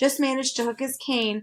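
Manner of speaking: ordinary delivery, nothing marked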